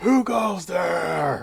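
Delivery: very loud, gruff, rough booming shout. Narrator voices someone calling out from down the hall, loud booming scream. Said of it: "Just this loud scream".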